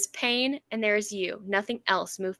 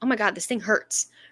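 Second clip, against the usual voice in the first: put-on panicked, freaking-out outburst. Retelling a story scene where she starts freaking out: imitating someone freaking out. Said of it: "she starts freaking out".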